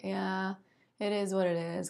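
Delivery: dry, dead-level, very monotone deadpan. Describing a group's dry, deadpan humor by example; monotone Eeyore-style voice. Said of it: "Their voices are often like very monotone".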